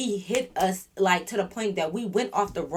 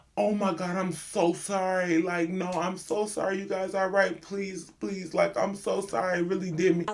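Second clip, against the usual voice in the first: profuse, pleading, very apologetic delivery; 3 dB quieter than usual. Retelling what the other driver said after the crash: imitating Morris, super apologetic. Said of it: "He is super apologetic".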